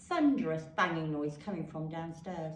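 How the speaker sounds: plain reading voice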